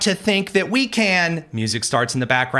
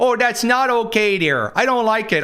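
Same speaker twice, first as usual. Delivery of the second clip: put-on accent from the Upper Midwest; 5 semitones higher than usual. Mocking how critics imitate her speech, playing a mom, in a mock Upper Midwest accent. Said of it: "why am I speaking in this accent".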